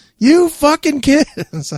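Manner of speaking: high, slow, angry mock scream.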